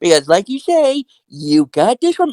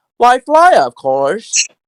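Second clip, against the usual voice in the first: put-on boyish cartoon hero voice. Showing off a voice, acting out a scene with three characters: Peter Pan voice. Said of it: "Now I can do this voice".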